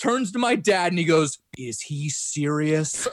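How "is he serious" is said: mock totally deadpan, flat, no expression. Retelling a friend's question to the speaker's dad: imitating Mark's deadpan. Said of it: "totally deadpan".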